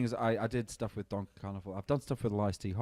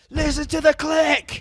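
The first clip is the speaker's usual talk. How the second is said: very high, very loud yell; 15 dB louder than usual. Recalling being the boss, retelling a shout at the harp player. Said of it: "I'm like shouting like to Steph".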